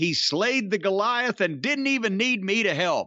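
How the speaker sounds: usual speaking voice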